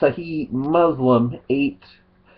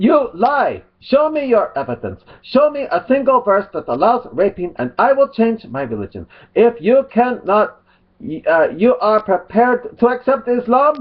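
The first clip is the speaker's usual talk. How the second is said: caricatured put-on Arabic accent, high-pitched and swooping; 9 semitones higher, 3 dB louder than usual. Acting out both sides of a debate, the speaker voices one side in mock Arabic accent. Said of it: "be using mock Arabic accent when I do mine".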